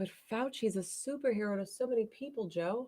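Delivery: really sarcastic. Replying to talk of a trial in Russia: really sarcastic. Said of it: "That was sarcastic".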